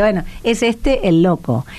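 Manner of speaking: plain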